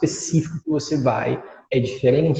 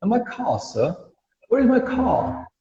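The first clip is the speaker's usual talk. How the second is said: British English accent, r dropped in "car"; 6 semitones higher than usual. Teaching English, the speaker shows how British speakers say car, in a British accent. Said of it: "o British, ele fala car".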